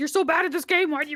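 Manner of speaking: put-on screaming. Talking about giving criticism nicely, acting out screaming at a bad player: imitating screaming at someone. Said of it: "like screaming like".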